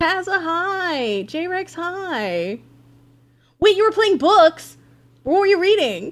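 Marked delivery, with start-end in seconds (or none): 3.6-6.1 aggressive, intense, higher and louder. Asking a viewer what they were reading: aggressive. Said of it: "Sorry, that was really aggressive".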